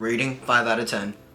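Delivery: low, flat deadpan monotone with no emotion.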